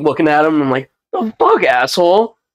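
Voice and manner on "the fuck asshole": high, indignant outburst.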